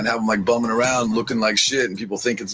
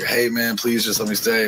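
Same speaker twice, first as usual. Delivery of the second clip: mock sugary, sweet, begging, pleading tone. Retelling how a visitor begged to be allowed to stay: imitating someone begging sweetly. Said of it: "begging, sweet, like, promising at the world".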